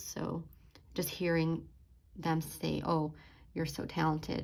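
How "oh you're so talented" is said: ordinary delivery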